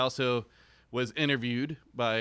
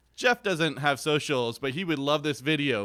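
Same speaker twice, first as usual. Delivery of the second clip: ordinary delivery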